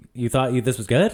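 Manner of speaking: put-on amused, disbelieving tone. Retelling a film scene where an early story gets rejected: imitating an amused remark. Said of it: "he's almost amused".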